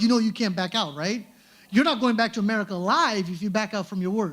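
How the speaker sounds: ordinary talk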